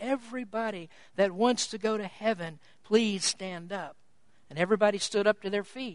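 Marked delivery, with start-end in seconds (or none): 0.0-4.0 hushed, very quiet, low, lowered preacher murmur. Retelling a sermon, the speaker quotes the preacher's request to the people, very quiet. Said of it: "he lowered his voice and very quietly said".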